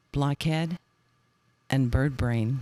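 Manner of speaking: very slow, solemn, unhurried delivery. Recalling how they improvised, showing how they spoke very slowly and solemnly. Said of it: "we talked very slowly and very solemnly like this".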